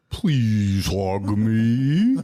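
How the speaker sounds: warped, sagging dying-doll voice, drawn-out "me". Showing how a talking doll sounds when its battery dies, Andre the Giant-like dying doll voice. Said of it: "the voice is all you know, fucked up".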